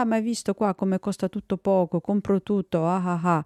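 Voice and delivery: put-on thick, very strong Milanese accent, laid on. Retelling what a man at the market said: imitating a strong Milanese accent. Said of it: "un fortissimo accento milanese che diceva".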